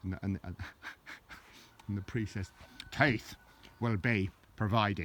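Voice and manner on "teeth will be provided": put-on Irish accent, much slower. Telling a joke, the speaker voices the priest's reply in an Irish accent. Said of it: "I'll do it in an Irish accent".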